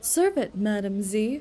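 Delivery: very serious, grave, low, dead-serious voice. Retelling how a character said the line: imitating a very serious voice. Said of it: "in such a seriously voice".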